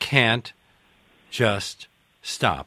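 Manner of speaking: loud, word by word, full stop after each. Interviewer reading a book title with a period after each word, pause after each word. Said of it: "I'm reading it that way because each one of those words has a period after it".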